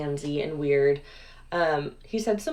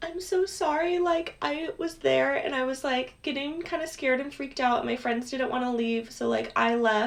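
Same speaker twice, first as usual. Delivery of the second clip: put-on sweet, girlish higher voice. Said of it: "like, sweet girl's voice".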